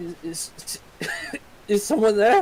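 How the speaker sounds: very high, swooping, youthful voice. A game master voicing a younger character heard nearby, in a younger voice. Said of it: "a younger voice".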